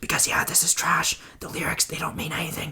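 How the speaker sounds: fast, rattled-off, hushed whisper. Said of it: "I don't know why I'm whispering".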